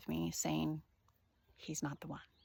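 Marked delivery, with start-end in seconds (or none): 1.6-2.2 faint, very quiet half-whispered voice, very close. Retelling a voice heard while walking to a date: imitating a half-whisper. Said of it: "whisper from my right ear".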